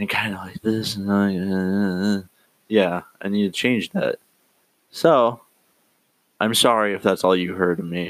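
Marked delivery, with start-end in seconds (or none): 0.0-0.9 mock flat monotone, quiet delivery. Podcaster mimics how their early episodes sounded, imitating own monotone, quiet voice. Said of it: "I sound really monotoned and quiet".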